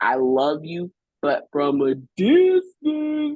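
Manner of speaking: drawn-out character voice with big pitch swoops. Talking about relationships that just have to end, in Madea voice. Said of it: "in my Medea voice".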